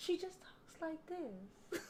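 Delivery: meek, breathy, hushed, docile whisper. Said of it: "assume she's docile".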